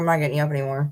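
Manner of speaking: usual speaking voice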